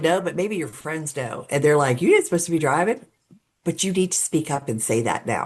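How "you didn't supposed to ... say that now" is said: plain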